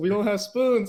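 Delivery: mock very high, loud, frantic, panicked screaming. Telling a listener what the brother yelled in the kitchen, retelling a scream. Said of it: "he was screaming that we don't have any spoons".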